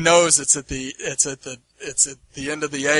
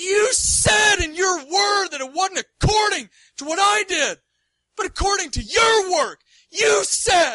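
heated, all-worked-up angry rant, very high-pitched. Retelling a man's dream where he pointed at Jesus; imitating an angry man. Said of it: "he was like all angry".

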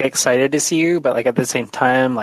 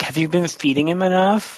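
high-pitched acted mix of worry and annoyance; 5 semitones higher than usual. Voicing a character asking another player a question: half concerned, half mad. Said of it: "half concerned and, like, half mad".

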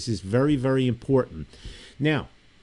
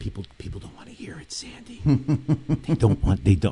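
whispered, lower in pitch and slower; 2 semitones lower than usual. Speaking to Sandy, the speaker drops into a whisper. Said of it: "I'm whispering like Biden in Ireland now".

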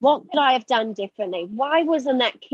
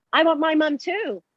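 put-on shouting, kept mild and modest; 4 semitones higher than usual. A swimming teacher recalls screaming back at a child, retelling a scream back. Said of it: "I just screamed back at him".

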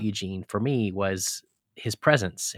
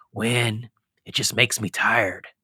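hoarse, rasping delivery. Recounting a conversation, speaker quotes the reply he got in a raspy voice. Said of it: "he has that raspy voice".

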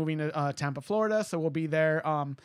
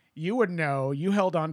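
put-on sassy, catty tone. Speaker quotes their dad's retort, imitating dad's catty sass. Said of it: "he is catty and sassy as fuck".

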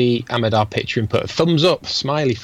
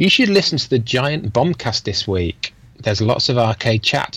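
ordinary talk, nothing marked

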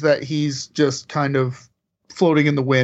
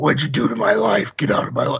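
deep, rough growling voice. Retelling the rooftop confrontation line: imitating Matt's low gravelly voice. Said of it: "he pulled that voice so low".

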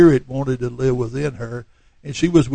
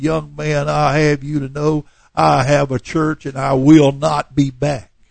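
anger audible in every word; 4 dB louder than usual. Retelling a visitor's reply after the service: imitating an angry reply. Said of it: "with anger in her voice".

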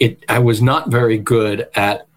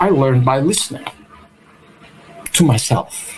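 put-on Austrian accent on English; 3 semitones higher than usual. Quoting Peter Drucker's reply to Warren, in Peter Drucker's Austrian accent. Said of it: "in his Austrian accent".

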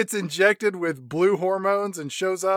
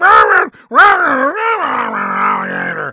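high-pitched blaring wah-wah sounds; 7 semitones higher, 10 dB louder than usual. Imitating a dad coming home loaded for bear about an alligator, Charlie Brown teacher voice. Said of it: "He sounds like a Charlie Brown teacher".

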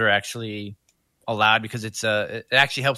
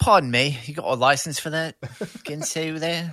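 bad fake English accent, pitched high; 5 semitones higher than usual. Joking during a conversation about knife bans, in a horrible English accent. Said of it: "horrible English accent".

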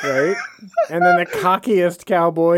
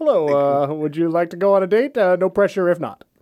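put-on very polite cowboy voice; 2 semitones higher than usual. Riffing on made-up cowboy sequels, the speaker performs as the Very Polite Cowboy. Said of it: "The Very Polite Cowboy".

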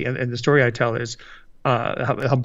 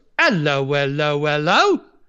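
stock English bobby delivery. Telling a favorite English joke on a podcast, quoting an English bobby. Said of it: "An English bobby ... the bobby goes".

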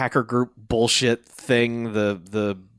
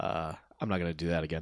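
ordinary delivery

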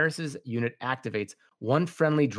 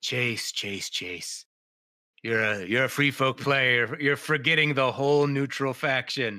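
slow, deliberate, measured tone. Imitating a player pointing out the neutral faction: impression of Michael Shinall. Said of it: "That was a solid impression".

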